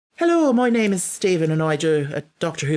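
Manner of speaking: attempted Irish accent. Asked to try an accent, giving an introduction in an irish accent.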